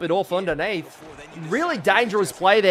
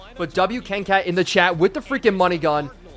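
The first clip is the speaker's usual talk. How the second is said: plain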